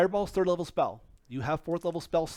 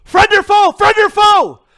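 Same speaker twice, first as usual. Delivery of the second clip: shrill, very loud, high-pitched shouted yell; 19 dB louder than usual. The game master voices a young redheaded woman calling out, yelling out. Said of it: "yells out".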